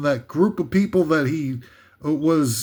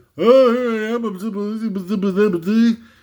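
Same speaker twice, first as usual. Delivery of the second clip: derisive, mocking, silly-sounding, higher-pitched voice; 5 semitones higher, 3 dB louder than usual. Mocking a movie star who blows off the story: mocking Bradley Cooper impression. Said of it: "He's like".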